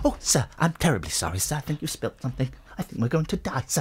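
put-on robot voice. Speaker shows how their eldest child does C-3PO, in a C-3PO impression. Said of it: "record my eldest doing his C3PO".

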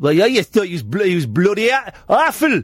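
put-on Geordie accent. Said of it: "it's a Geordie accent, like".

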